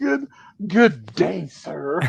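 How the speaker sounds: huffy, flouncing, indignant tone. Acting out Susie's comment with a hair flip, imitating Susie. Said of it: "pretend my beard is Susie's blonde hair".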